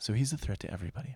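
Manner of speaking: very soft, hushed public-radio host delivery. After noticing the yelling, the speaker repeats the point in an NPR voice. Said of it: "I'll put on my NPR voice".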